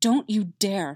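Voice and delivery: trembling, wavering, shaking voice. Narrating a character speaking to the man pinned beneath him: shaking voice. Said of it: "registering his voice was shaking".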